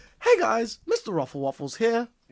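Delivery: high, sing-song toy voice, pitch lifting and swooping around. Joking about a pre-order stuffed toy, doing the Mr. Raffle Waffles voice. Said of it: "I can't do high pitch".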